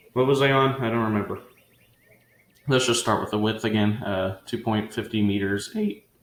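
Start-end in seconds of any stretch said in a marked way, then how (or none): 4.4-5.9 voice cracking, breaking in pitch. Reading out measurements while recording a video, voice cracking. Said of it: "Voice crack".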